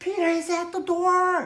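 very high, thrilled, overjoyed cry. Reading aloud how the servant girl announces Peter at the door: excited exclaim.

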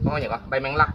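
ordinary delivery

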